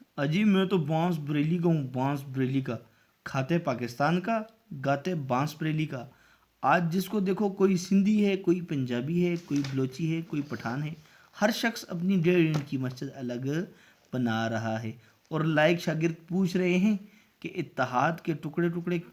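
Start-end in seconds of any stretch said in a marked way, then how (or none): none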